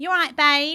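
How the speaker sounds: very loud, high, put-on Essex accent. Showing what people from Essex sound like, doing an Essex accent. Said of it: "Essex is like".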